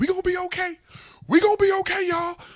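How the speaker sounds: acted-out very high, loud, frightened voice. Retelling asking in a screaming movie theater if everyone would be okay: imitating own scared voice. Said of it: "that scary".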